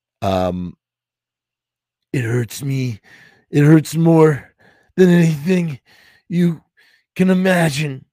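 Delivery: speaking through great pain, breaking off. A narrator reads a man speaking to Tina, talking in great pain. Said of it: "as if merely talking gave him great pain".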